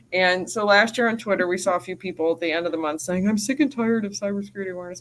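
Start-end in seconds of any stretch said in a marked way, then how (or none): 3.2-5.0 put-on dopey, whiny, complaining dumb guy voice. Quoting complainers on Twitter in a put-on dumb guy voice. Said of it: "That's my dumb guy voice".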